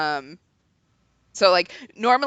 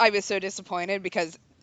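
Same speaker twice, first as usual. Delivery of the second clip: ordinary talk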